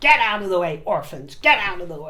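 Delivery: scornful, derisive mocking send-up. Repeating a line viewers enjoyed last broadcast: imitating the person described. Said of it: "my little impression".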